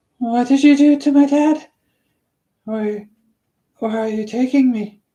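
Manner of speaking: high, loud, frightened, panicky tone. Reading a story aloud, a boy questioning a silent bunny driver: panicked voice. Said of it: "could hear the panic in his voice".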